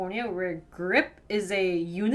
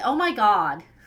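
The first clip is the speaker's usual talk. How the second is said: loud, put-on Valley girl accent; 6 dB louder than usual. The speaker demonstrates a really good valley girl accent. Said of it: "I have this like really good Valley accent, Valley girl accent".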